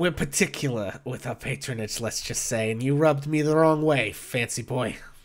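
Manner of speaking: scornful, dismissive, withering, disdainful tone. Voicing a bartender snubbing a player: withering, disdainful tone. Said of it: "gives you this withering look".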